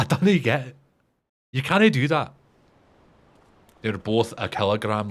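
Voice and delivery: put-on Scottish accent. Showing your stereotypical accent by quoting Limmy, do a Limmy quote in stereotypical Scottish accent. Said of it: "that's my stereotypical Scottish accent".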